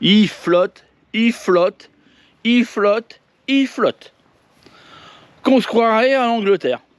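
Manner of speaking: fake old-fashioned English accent. In a video, the speaker talks to viewers in a put-on english accent. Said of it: "je te prends un vieux accent anglais".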